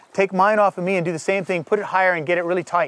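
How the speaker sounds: ordinary delivery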